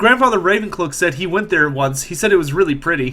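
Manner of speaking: ordinary talk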